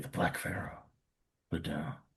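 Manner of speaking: barely audible whispered mutter under the breath. Putting down the pharaoh item and naming it: under the breath. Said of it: "under my breath, I barely audibly say".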